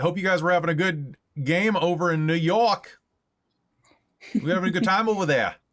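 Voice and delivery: Bronx accent drifting Australian. Greeting a raiding group from New York, attempted Bronx accent that sounded Australian. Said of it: "I don't know what kind of accent that was".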